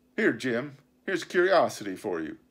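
ordinary delivery

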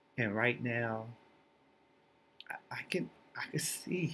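fighting back tears, halting, on the verge of crying. Describing being able to see again after a visit, holding back tears. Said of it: "I'm trying not to cry".

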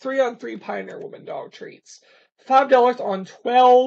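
very loud, high speech through a yawn. Recording a video, the speaker talks through a yawn. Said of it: "sorry for yawning".

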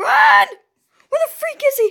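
high, swooping, terrified, panicky blurted outburst. Streamer playing a game in vr, screaming in fear. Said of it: "sorry for the screams".

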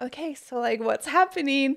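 acted awkward tone. Retelling handing a product to people door to door, imitating an awkward question. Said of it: "we'd awkwardly be like".

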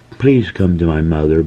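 begging, pleading, imploring. A girl asks the doctor to come to her sick mother, begging. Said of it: "begged the girl".

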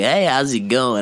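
put-on radio host announcer voice. Speaker wishing he had one, trying out a radio host voice. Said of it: "I wish I had a good fucking radio host voice".

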